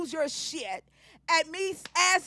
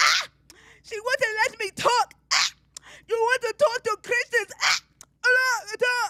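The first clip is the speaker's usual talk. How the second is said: shrill, loud screech owl squawk, nonsense sounds; 6 semitones higher, 5 dB louder than usual. Mocking someone who came up on stage: imitating them screeching like an owl. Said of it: "That's what you sound like".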